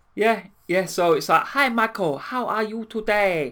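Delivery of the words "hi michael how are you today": put-on Chinese accent, slow and high. Acting out a woman who can't get her own voice back: chinese accent. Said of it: "she develops a Chinese accent".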